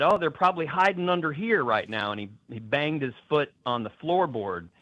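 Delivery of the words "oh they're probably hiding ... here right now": ordinary talk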